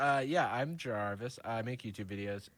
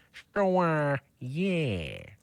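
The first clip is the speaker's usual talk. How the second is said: loud animated cartoon dad voice, drawn-out "sure"; 4 semitones higher, 8 dB louder than usual. Showing the only Family Guy character voice they can do: Peter Griffin voice. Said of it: "I can do Peter Griffin doing a".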